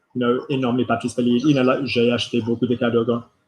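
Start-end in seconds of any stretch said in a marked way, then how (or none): 1.9-3.1 flat monotone, every syllable on one note. Showing a learner how to say a French sentence: flat monotone. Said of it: "all on the same".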